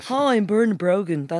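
well-to-do northside way of talking. Showing how Bernard Brogan talks, in a posh north side Bernard Brogan impression. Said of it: "That's how he talks a bit like that".

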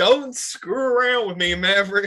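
put-on slow Southern accent. Reading Stinger's line aloud in a Southern accent. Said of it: "I like the Southern accent".

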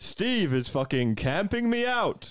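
fighting-game play-by-play announcer voice. Saying a Smash rage line in the announcer voice: Smash announcer voice. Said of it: "do Smash Rage in the announcer voice".

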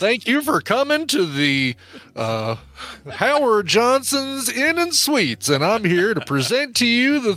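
exaggerated, put-on American Southern accent. Imitating someone's welcome speech at a hotel, in an imitated Southern accent. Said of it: "Might be able to do his southern accent".

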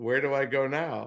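slow, flat, zero-emotion deadpan monotone. Retelling the driver's reaction to being yelled at: imitating Perez with zero emotion. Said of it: "just zero emotion".

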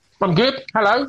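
talking with a full mouth. Podcast guest greets the host, talking with a mouthful of crisps. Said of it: "You just put a mouthful of crisps in your mouth".

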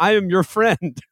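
horse character voice. Retelling a described fake video: Robert Downey Jr. talking like Mister Ed. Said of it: "Robert Downey Junior talking like Mister Ed".

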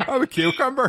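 put-on Northern Irish accent. Joking with the others, imitating Tony: Northern Irish accent. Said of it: "Why do I do a Northern Irish accent for Tony like that?".

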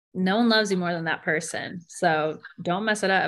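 usual speaking voice

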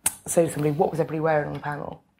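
plain

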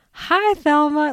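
put-on, high, syrupy, sugary-sweet overly nice tone. Retelling a show scene where a man answers a call, in a mock really nice tone. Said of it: "like really nicely".

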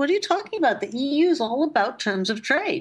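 high-pitched, exasperated yelling.

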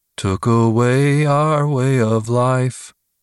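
slow, husky, emotionless deadpan drone. Quoting a character's new delivery once the bubbly charm is gone, imitating husky, deadpan delivery. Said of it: "a delivery so husky, deadpan, and emotionless".

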